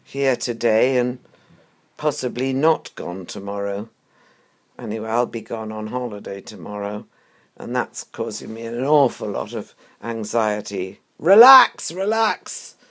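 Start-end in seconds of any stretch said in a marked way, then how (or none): 11.1-12.7 shrill, very loud, very high screeching voice. Speaker mimics people telling them to relax, in a terrible screeching voice. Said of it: "in this terrible screeching voice".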